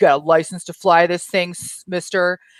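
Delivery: put-on arrogant cop voice. Retelling a story where a police officer stops a driver: imitating an arrogant cop. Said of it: "the cop was being very, like, arrogant".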